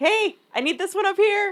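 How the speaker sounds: super loud, very high-pitched screaming shout. Retelling calling loudly for a pallet at work: imitating own past scream. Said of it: "screamed, like".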